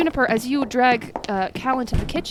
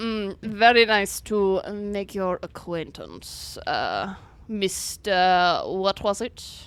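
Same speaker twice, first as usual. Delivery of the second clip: very slow, snooty, condescending, haughty drawl; 2 semitones lower than usual. Voicing a gentleman looking down his nose at the party: haughty voice. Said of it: "he looks down his nose at you".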